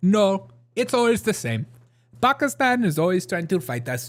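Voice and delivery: bad Indian accent. Retelling his answer when asked about India and Pakistan, in a bad Indian accent. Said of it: "That's like my worst Indian impression".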